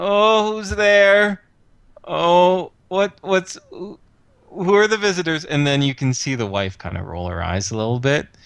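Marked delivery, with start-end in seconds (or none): 0.0-5.5 high, tinny, whiny voice. Describing a visit, mimicking a man calling from upstairs in a tinny, whiny voice. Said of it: "a tinny, whiny voice going".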